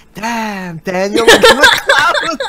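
grand, loud, swooping, echoing god voice. Recalling a YouTube Rewind joke, the speaker does an echoing God's voice. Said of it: "like an echoing like God's voice".

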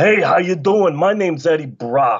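bad, overdone, terrible New York accent. Mocking the actor playing Eddie Brock: bad New York accent, Eddie Brock. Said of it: "the worst New York accent I've ever seen".

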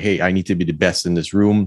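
ordinary talk

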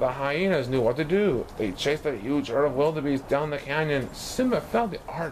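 ordinary delivery, nothing marked

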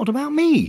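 tiny, squeaky little voice at a very high pitch. Narrator reads Piglet's line as he looks up, in a squeaky Piglet voice. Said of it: "said in his squeaky voice".

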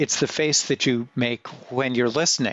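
ordinary talk

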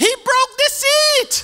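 very high-pitched, slow, deliberate shout. Retelling a passenger's reaction on a flight: imitating someone shouting. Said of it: "And she shout".

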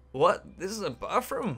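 terrible, high-pitched put-on Korean accent. Voicing a character in a scene with Yuki: terrible Korean accent. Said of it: "That was a terrible Korean impression there".

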